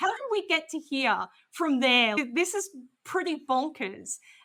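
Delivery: joyful, delighted wonder. Summarizing a topic the speaker loves discussing, happy and joyful. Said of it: "you can probably hear it in my voice now".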